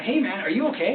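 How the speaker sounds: normal talking voice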